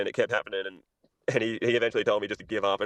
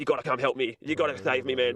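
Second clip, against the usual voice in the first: mock panicked pleading, higher; 3 semitones higher than usual. Retelling messaging a friend for help: imitating panicked pleading. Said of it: "start panicking and messaging him".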